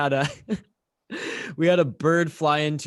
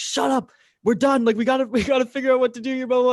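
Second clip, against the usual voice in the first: put-on piercing, high-pitched, shrill screaming; 10 semitones higher than usual. Retelling a power outage on air in the studio: imitating own past screaming. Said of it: "I'm screaming at him".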